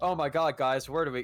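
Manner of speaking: put-on dumb, rambling chattering voice. Retelling how a lost saxophone player rambled: imitating someone chattering dumbly. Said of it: "chattering off".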